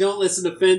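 normal talking voice

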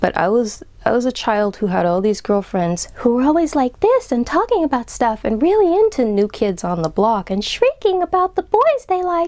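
high, swooping voice from the top of the range. Remembering a childhood spent among chattering girlfriends, speaking in the higher part of the voice. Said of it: "I'm talking kind of in the higher part of my voice right now".

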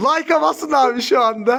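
excited, thrilled, eager. Streaming while opening boxes, asking viewers to hit like, excited. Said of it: "Çok heyecanlıyım".

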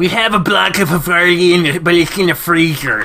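very nerdy, high-pitched voice. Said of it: "Daxton, the nerdiest voice ever".

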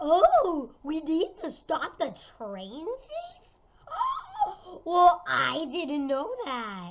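feigned, slow, swooping, plainly sarcastic surprise. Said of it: "I was being sarcastic".

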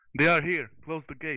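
urgent, loud, high alarmed shouting. Narrating a scene as a guardsman who spots an approaching orc, shouting out. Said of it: "He shouts out".

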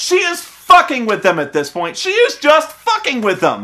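mild, disbelieving, incredulous cry. Recalling a movie scene, re-creating what they yelled out in the theater. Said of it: "I yelled in the theater".

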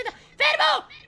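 loud, high-pitched shout.

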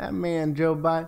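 put-on Oklahoma accent. Streamer from Oklahoma showing they can do the accent, Oklahoma accent. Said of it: "I can make the accent. I'm from Oklahoma".

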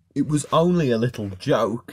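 ordinary delivery, nothing marked

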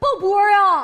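high, loud, overjoyed, joyful cry.

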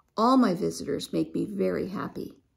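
plain

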